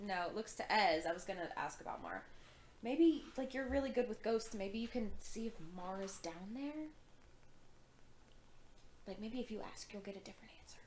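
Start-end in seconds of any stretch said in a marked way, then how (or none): 4.5-10.8 very quiet, hushed, secretive whisper. A player's character asking ez, not wanting the pit to hear, whispering. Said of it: "whispering, like, she doesn't want the pit to hear".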